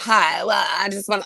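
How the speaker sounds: put-on full Valley Girl manner of speaking. Showing another speaker how a woman's voice gets, in a Valley Girl voice. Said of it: "her voice just really gets into, like, Valley Girl".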